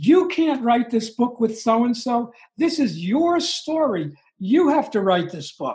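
emphatic, insistent, lecturing scolding tone. Retelling a friend who screamed at the speaker: imitating a friend screaming. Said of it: "she literally screamed at me".

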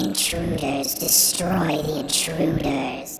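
put-on insect-swarm creature voice. The narrator voices a creature whose voice comes from the sound of swarming crickets. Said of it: "its voice is coming from that sound".

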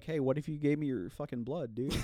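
hushed, sweet-talking, coaxing half-whispered bat voice. Acting out a vampire bat talking someone into giving blood: half-whispering bat voice. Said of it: "they whisper in your ear".

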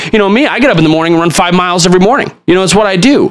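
self-satisfied, pompous, very high preacher voice. Retelling how a pastor bragged in his sermons: imitating a pompous pastor. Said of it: "This, like, pompous".

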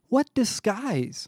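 disbelieving shout. Narrator voicing a man answering talk of an alien's disguise, shouting. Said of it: "Barrett shouted".

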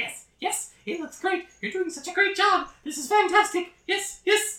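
very high, tiny little creature voice. Voicing a little creature hopping on a table, cheering: little creature voice. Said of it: "this little creature that is standing on a table".

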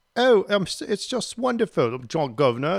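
English accent, put-on. Retelling a drum major who greeted him suddenly in an English accent. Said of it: "she just starts talking in this English accent".

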